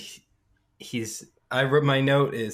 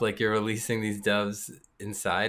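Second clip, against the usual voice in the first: ordinary delivery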